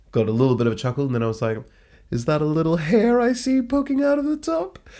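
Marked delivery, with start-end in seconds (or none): 2.1-4.8 playful, put-on, teasing, silly, goofy intonation. Retelling a teasing question that got a laugh: put-on silly intonation. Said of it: "I said it like that with the kind of silly intonation".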